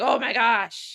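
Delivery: mock disgusted put-on voice. Imitating people reacting to someone, mock disgust. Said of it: "disgusted they are".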